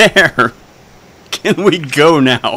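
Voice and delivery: impatient, irritated, quick, irritable outburst. As a character turning to the thief after the cleric, quick and irritable. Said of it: "quickly and irritably turns to the cleric and just goes".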